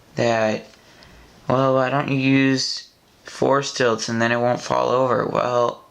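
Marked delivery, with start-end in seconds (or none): none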